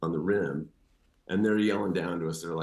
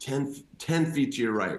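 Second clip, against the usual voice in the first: put-on, high-pitched yell, sounding directed upward; 6 semitones higher than usual. Retelling how he yelled up directions to someone above, retelling a yell up. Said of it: "So I yell up".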